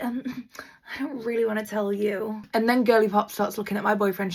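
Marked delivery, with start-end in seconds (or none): 0.0-2.4 withdrawn, hushed, slow, drawn-out murmur. Retelling a friend's answer about the baby: imitating someone going quiet. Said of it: "She gets so quiet".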